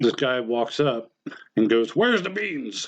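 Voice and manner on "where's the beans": furious, high-pitched, angry shouted voice. Retelling what a guy said when he walked up to him, retelling an angry yell. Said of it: "But like yelling, like he's angry".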